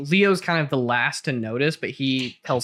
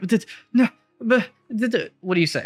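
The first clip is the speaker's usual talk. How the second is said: put-on panicked, frightened man's voice, higher; 8 semitones higher than usual. Voicing a panicked middle-aged man approached by a player: panicked frightened voice. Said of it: "he's panicked and in a, a tussle".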